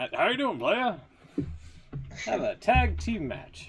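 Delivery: very high-pitched put-on voice. Imitating a wrestling figure who shows up backstage: Teddy Long impression. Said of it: "such a good impression".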